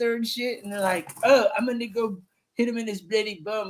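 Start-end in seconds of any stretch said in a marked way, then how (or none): 1.2-3.7 put-on try-hard tough-guy voice, straining to sound hard. Mocking Jason Statham trying to sound gangster: mocking Jason Statham sounding gangster. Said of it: "when they try to sound gangster".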